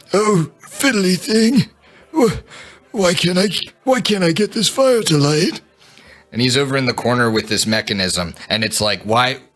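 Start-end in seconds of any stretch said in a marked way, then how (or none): 0.1-5.6 put-on very high, fussing old man voice. Voicing an old man who cannot get a fire to light, old man voice. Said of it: "subject everybody to the old man voice".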